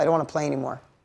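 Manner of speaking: hysterical, tearful sobbing, crying through words, breaking down. Retelling a daughter's words after a lost game: imitating hysterical crying. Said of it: "Crying hysterical".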